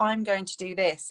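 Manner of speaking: normal talking voice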